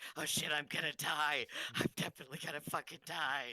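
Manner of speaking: very high, squeaky, frantic, panicked goblin voice. Voicing a goblin who sees the archer coming: panicked goblin voice. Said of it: "you hear him in Goblin, he's just like".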